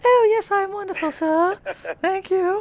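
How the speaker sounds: very high-pitched, frilly put-on voice. Greeting Mr. Montana in a role-play, speaker puts on a frilly voice. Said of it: "some kind of frilly voice".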